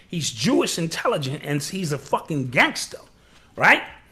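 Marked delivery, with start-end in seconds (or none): none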